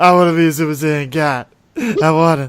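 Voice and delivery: blubbering, loud, high-pitched, whiny crying. Retelling a scene where Vegeta wants to go Super Saiyan God, imitating Vegeta crying. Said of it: "cut to Vegeta crying like".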